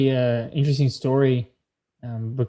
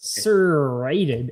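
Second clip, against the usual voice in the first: mock heavy stress on serrated. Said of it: "it was like".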